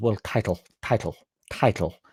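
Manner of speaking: breathy, posh voice. Mocking how a pundit says "title": Simon Jordan impression. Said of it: "the way he says word, world, he goes".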